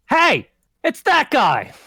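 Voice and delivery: big, loud, high, drawn-out shout. Voicing someone in a street crowd who spots a person: large shout from the street. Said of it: "you hear a large shout".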